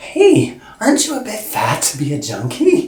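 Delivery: most pleasant, uppy sing-song tone. Retelling a wardrobe woman's remark during a fitting: imitating a pleasant upbeat tone. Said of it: "in the most pleasant, uppy tone".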